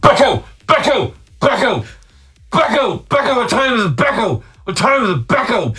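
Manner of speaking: put-on breaking teen voice. Speaker retells what a 13-year-old said from downstairs, teen's breaking voice. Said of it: "in his 13-year-old breaking voice".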